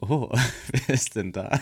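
corny, clichéd, dumb fawning gushing. Retelling middle-aged ladies in a butcher shop reacting to a tall man; put-on clichéd reaction. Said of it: "So richtig dumm klischeehaft".

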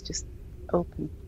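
gentle, hushed, very soft whisper. Player's character telling a door to open in Sylvan, soft voice. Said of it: "I say it in a kind of soft voice".

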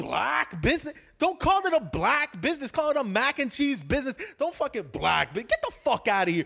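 furious, high-pitched, screaming rant. Retelling going off on a crowd from stage: retelling screaming at the crowd.

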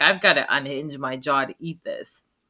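normal talking voice

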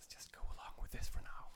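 soft, unvoiced whisper. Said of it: "I'm just whispering to Betty".

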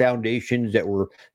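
ordinary talk, nothing marked

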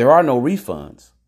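shrill, very loud voice. Retelling a store clerk refusing a refund: retelling a raised voice. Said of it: "And he raised his voice".

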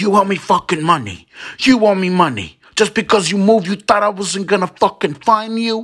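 high, loud screaming and shouting. Retelling how the brother confronted a man over money: imitating someone screaming. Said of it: "he starts screaming and shouting".

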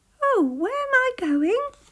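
very high, loud crying out. Narrating a hedgehog's line as a cup falls past his eyes, crying out. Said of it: "he cried".

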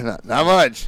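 playful, joking teasing tone. Speaker jokes around with the person he's talking to, teasing. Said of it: "I'm teasing you".

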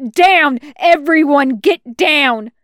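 full-lunged, booming, drawn-out shouted bellow. Seeing where it will land, he warns everyone, bellowing at the top of his lungs. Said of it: "at the top of his lungs".

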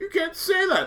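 mock crying, not overdone. Retelling a film scene where a woman pleads before shooting: imitating restrained crying. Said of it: "she's crying, but she's not, like, over the top crying".

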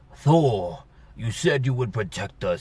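small, undersized dwarf voice with no depth. Mocking how the film made a huge character talk, imitating the big character's voice. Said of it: "they made him talk like this".

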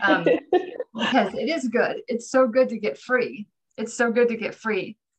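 voice holding back tears. Speaking to listeners while both hosts are fighting back tears. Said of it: "both of us are like fighting back tears".

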